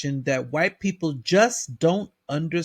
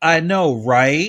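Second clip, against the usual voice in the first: raised, quite sarcastic, quippy tone; 6 dB louder than usual. Retelling an employee's reply to a customer: imitating a sarcastic remark. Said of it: "said in response to him quite sarcastically".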